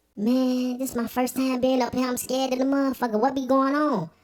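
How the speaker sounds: very high, small voice. Retelling a big cellmate's greeting, imitating his voice that didn't match his body. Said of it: "His voice ain't match his body".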